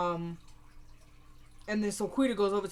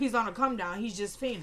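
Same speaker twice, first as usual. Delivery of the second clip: ordinary talk, nothing marked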